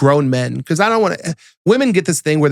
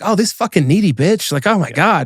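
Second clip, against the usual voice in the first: put-on fed-up, put-out, annoyed and irritated; 3 semitones higher than usual. Retelling how his younger self would react: imitating younger self, annoyed. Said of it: "younger me would have been like".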